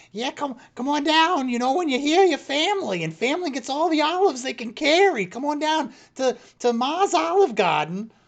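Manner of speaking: put-on very high old-woman voice calling out. Voicing an old woman calling from an olive orchard: old woman's voice. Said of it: "you hear this old woman inside of it going".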